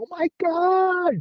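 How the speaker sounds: play-acted shrill, high shriek, "God" stretched long. Retelling how someone at a party reacts: imitating someone screaming. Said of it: "somebody will just go scream".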